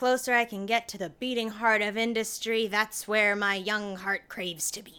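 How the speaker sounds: loud, put-on, swashbuckling pirate accent. Joining a conversation about a board meeting, in a pirate voice. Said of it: "I don't know why I said that like a pirate".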